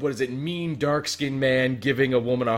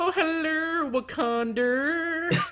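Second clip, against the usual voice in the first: put-on female character voice, pitched higher. Acting out a character arriving in Wakanda: Madea voice. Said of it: "Madea goes to Wakanda".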